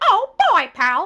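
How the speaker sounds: high-pitched cartoon mouse impression. Retelling doing Disney voices for a photographer, in a Mickey Mouse voice. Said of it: "that is actually my canon voice. That is one of my favorite voices to do is freaking Mickey Mouse".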